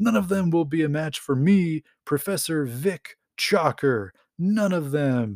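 play-acted grand, boastful, declaiming proclamation. Retelling a comic villain's declaration: retelling a loud proclamation. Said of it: "he loudly proclaims".

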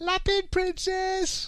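put-on very high seven-year-old child's voice. Shouting it the way he did at seven: [name] as a seven-year-old. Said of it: "in the original [name] voice when he was like seven".

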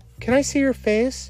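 begging tone. A child, grabbing the gunman's trousers, pleads with him. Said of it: "She grabbed his trousers and pleaded".

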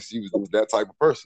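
ordinary talk, nothing marked

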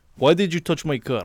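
put-on Russian accent. Doing a Russian-style voice for a joke: Barry character voice. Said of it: "you sound like that guy from Barry".

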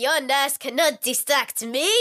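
really bad fake French accent. Retelling a party story, quoting what he said back: really bad French accent. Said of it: "doing a really bad French accent".

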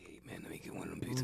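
barely audible, very quiet, hushed whisper. Acting out someone ordering pizzas, whispered. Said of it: "He go in there and whisper like".

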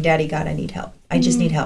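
play-acted tearful, weeping, crying plea. Retelling a past prayer in severe emotional pain: imitating own past crying. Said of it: "sitting there crying".

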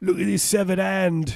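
very high, loud, put-on Australian accent. Quoting the movie hero showing off a cut-off hand: Crocodile Dundee impression. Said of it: "That's how Australians talk".

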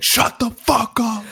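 mock very high, drawn-out, top-of-the-lungs scream. Acting out a man screaming at a baby, retelling a top-of-lungs scream. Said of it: "screams at the top of his lungs like".

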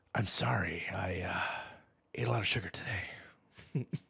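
very slow delivery with every word dragged out. Quoting a Hannibal King movie line, trying for Ryan Reynolds impression. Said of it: "I'll try to do my best Ryan Reynolds".

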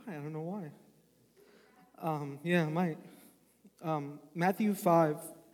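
halting voice, on the verge of tears. Speaking to a gathering before reading Matthew 5, on the verge of tears. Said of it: "I want to cry".

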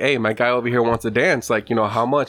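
ordinary delivery

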